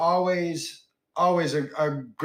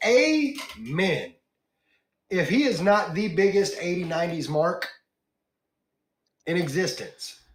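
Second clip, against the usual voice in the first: getting fired up and heated, worked-up. Reacting to a viewer's message in the chat, getting a little heated. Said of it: "I'm getting a little heated there".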